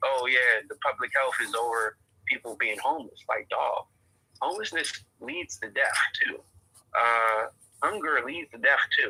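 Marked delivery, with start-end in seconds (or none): none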